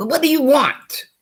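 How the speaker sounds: shrill, very loud, very high, irritated voice. Retelling what someone in court asked, imitating an annoyed tone. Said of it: "You don't give me that kind of tone".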